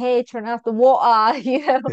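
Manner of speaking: put-on cockney-style London accent. Speaker recalling the accent they had as a young child, East End English accent. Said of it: "East End kind of English accent".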